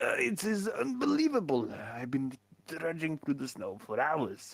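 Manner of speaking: put-on French accent, high and swooping. A lost traveler in the snowy woods explains his unconscious employee, french accent. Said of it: "Ah, you are French. / Ah, you are French. / accent".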